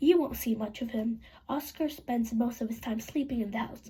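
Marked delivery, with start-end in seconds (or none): none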